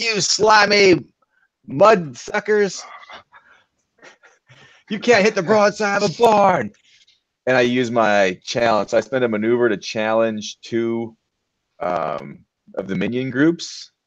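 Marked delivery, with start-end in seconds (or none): 0.0-6.7 jeering, taunting yell, pitched very high. Kicking open a door and taunting enemies in the game: yelling at enemies. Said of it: "I just start yelling at these things".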